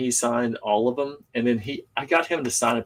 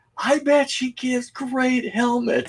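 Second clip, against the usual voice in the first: mock, very high-pitched, almost shouting; 13 semitones higher than usual. Retelling a moment of almost yelling a line at her. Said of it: "I'm sitting here like almost yelling at her".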